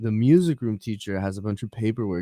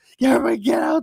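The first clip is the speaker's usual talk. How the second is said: mock scream, higher pitch. Retelling a buddy running down the hall about a bomb: imitating someone screaming. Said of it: "He's running down the hall screaming".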